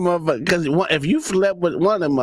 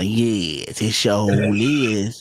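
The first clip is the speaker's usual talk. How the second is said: put-on old woman voice, lower, slower; 7 semitones lower than usual. Describing a woman who talks like the speaker's mama, imitating a seventy-two-year-old woman. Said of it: "she talk like my mama".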